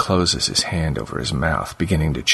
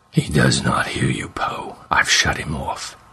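detached, annoyed, raw, bubbling monster voice; 3 semitones lower than usual. Reading a story aloud as the monster speaks, in a raw, bubbling monster voice. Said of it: "a raw, bubbling voice not meant for English speech, but conveying a tone of detached annoyance".

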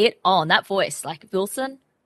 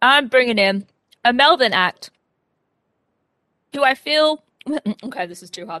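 mouth full, much louder; 5 semitones higher, 6 dB louder than usual. Introducing the next act on the show while eating pastry: talking with mouth full. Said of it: "Why are you eating during the show".

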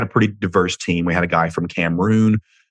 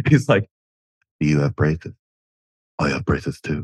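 put-on dopey cartoon teen voice, lower; 4 semitones lower than usual. Recalling a scene from Beavis and Butthead Do America, Butthead impression. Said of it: "where he's like".

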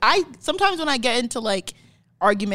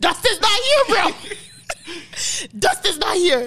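high, cocky flexing tone. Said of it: "he started flexing back".

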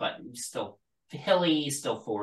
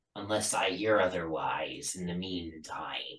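put-on pirate voice, quieter; 3 semitones lower, 6 dB quieter than usual. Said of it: "It was just a pirate voice".

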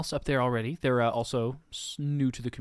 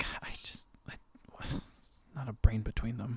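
put-on grumbling under breath, quieter; 3 semitones lower, 8 dB quieter than usual. Voicing a character who sits down after the others leave: muttering in character. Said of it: "You just hear her muttering stuff".

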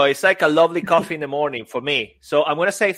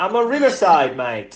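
imitated Cockney way of speaking; 2 semitones higher than usual. Answering Peter's question of where he is, in a Cockney accent. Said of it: "that's my Cockney accent".

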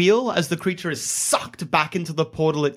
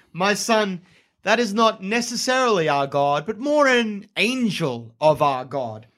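genial, grand-sounding, big, pleasant voice; 3 semitones higher than usual. A narrator voices a figure speaking to a player's character from behind, booming pleasant voice. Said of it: "A booming, pleasant voice sounds from behind you".

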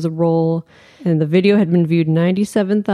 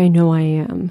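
imitated crying, tearful voice. Retelling what a woman said in a post: imitating someone crying. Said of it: "she was, like, crying".

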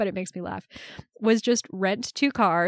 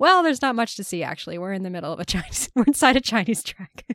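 ordinary talk, nothing marked

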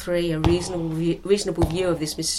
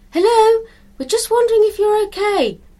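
a bit louder, very high-pitched, raised calling voice; 5 dB louder than usual. Donna calls toward a shed from the edge of the plot, shouting a little louder. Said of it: "shouted Donna a little louder".

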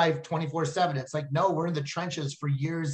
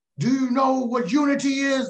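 put-on, loud, high drill-sergeant-style hollering; 9 semitones higher, 6 dB louder than usual. Retelling how a man yelled at a surrounded group, imitating someone yelling. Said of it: "he's yelling at everyone like".

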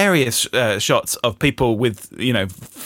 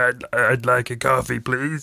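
puppet-style made-up voice. Imitating a man with a made-up Muppet voice ordering coffee: imitating a Muppet-like voice. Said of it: "that guy exists in the world and will be going into shops and saying".

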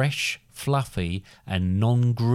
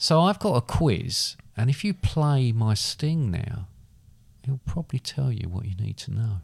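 volume fading gradually quieter; 3 semitones higher than usual. Explaining a quiz to a co-host, getting gradually quieter. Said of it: "you get gradually quieter".

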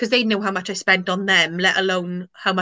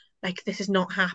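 mock mutter, much quieter; 7 dB quieter than usual. Retelling how the speaker's dad reacted to the news, imitating dad muttering. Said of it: "he was just muttering".

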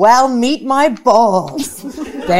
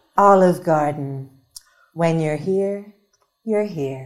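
low, wet-sounding commercial announcer voice; 5 semitones lower, 5 dB quieter than usual. Voicing the announcer in a mock Olive Garden ad, wet announcer voice. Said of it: "Announcer. Wet voice".

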